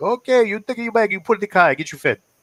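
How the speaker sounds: thick, loud, very high-pitched put-on Italian accent. Retelling mom's instructions after a hug, imitating her Italian accent. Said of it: "her accent".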